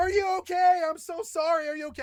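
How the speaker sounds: put-on screaming. Retelling running full tilt to help a bleeding woman: retelling screaming. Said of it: "I'm running and I'm screaming".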